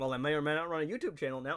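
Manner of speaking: ordinary talk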